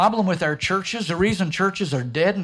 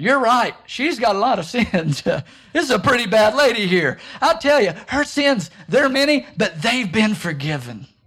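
heavily sarcastic, pitched up; 4 semitones higher, 4 dB louder than usual. Acting out a scripture scene, imitating Jesus with a sarcastic jab. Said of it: "Jesus interjecting a little sarcastic jab".

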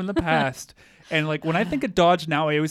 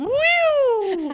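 mocking cheerful, carefree commercial voice, higher; 3 dB louder than usual. Describing a commercial with people on trampolines, imitating cheerful yuppies. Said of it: "they're just like".

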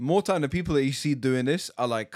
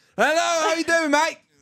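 mock loud, very high shouting; 6 dB louder than usual. Describing people on the phone: imitating someone shouting on the phone. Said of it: "certain people just shout on the phone".

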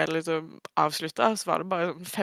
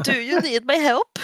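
loud, high, dopey, dim-witted hurdy-durdy voice; 8 semitones higher, 6 dB louder than usual. Describing a man who wanders in, the speaker imitates him in a hurdy-durdy imitation voice. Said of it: "er sånn der hurdy-durdy".

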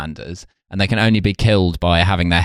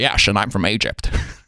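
put-on drawling Scottish accent. Describing how Sean Connery plays Ramirez, who is from Egypt, do a Sean Connery voice. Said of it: "Sean Connery is like".

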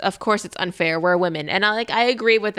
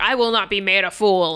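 put-on ranting tirade, slower. Speaker recounts how a man ended his tirade, retelling a tirade. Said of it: "ends his tirade by going".

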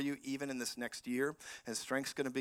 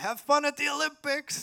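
shout, higher and louder; 13 semitones higher, 8 dB louder than usual. Speaker retells what they shouted at people running away, retelling own shout. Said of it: "I shouted".

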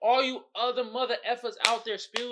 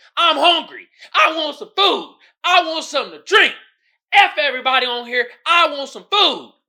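very loud raving, ranting shout; 4 semitones higher, 10 dB louder than usual. Retelling how a man on the train was yelling: imitating a man yelling. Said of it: "came on the train and was yelling".

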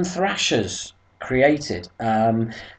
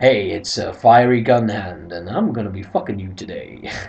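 put-on seventies porn star come-on voice; 8 semitones lower than usual. Joking about a record label name, acting out a put-on seventies porn star voice. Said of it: "that sounds like a porn star from the seventies".

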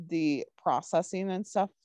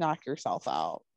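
put-on sassy tone, much lower pitch; 4 semitones lower than usual. Recapping a show scene where he is annoyed with her, mock-sassy Tim Bradford. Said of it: "just in a sassy tone".

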